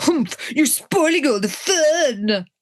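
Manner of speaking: sulky, pouting, drawn-out delivery. Retelling a scene from a book, imitating a pouting girl. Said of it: "she literally pouts and says".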